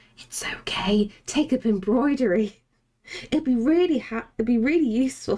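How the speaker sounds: stage-whispered, spectral, coaxing voice close at the ear. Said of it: "you're whispering things in people's ears".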